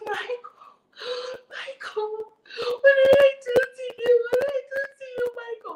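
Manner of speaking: mock tearful, dramatic, high crying begging voice. Retelling how she pleaded with a man when she saw him, imitating her own crying. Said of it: "I started crying".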